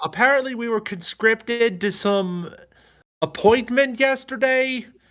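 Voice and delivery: loud, very high-pitched shout. Explaining to the guard why they must go, shouting. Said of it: "just shout".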